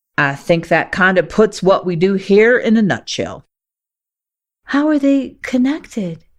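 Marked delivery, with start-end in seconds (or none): 4.7-6.2 feeble, weak, small, pitched-up voice. Reading a story aloud, a character asks a question: asking weakly. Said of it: "you ask weakly".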